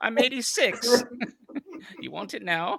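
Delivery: put-on acted elderly British woman voice. Acting out a wife answering her husband, old British lady voice. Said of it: "an old British lady holding a cup of tea".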